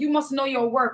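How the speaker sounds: plain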